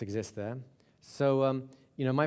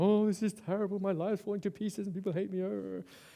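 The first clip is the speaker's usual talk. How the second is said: acted, high, tearful, crying sobbing voice; 7 semitones higher than usual. Retelling a book's story of a woman at a therapy clinic, imitating her sobbing. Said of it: "sits down and starts sobbing".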